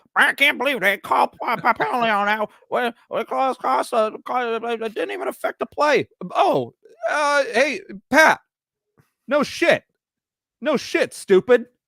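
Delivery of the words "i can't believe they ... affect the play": stumbling, halting, stammering put-on voice. Mocking a quarterback complaining about a penalty: Patrick Mahomes voice. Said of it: "that was not a Patrick Mahomes voice".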